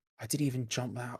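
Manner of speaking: ordinary delivery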